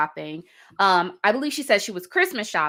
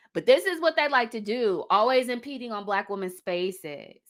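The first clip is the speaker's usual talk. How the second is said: ordinary talk, nothing marked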